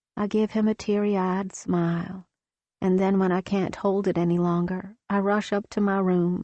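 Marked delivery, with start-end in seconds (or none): none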